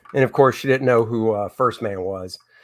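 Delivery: ordinary talk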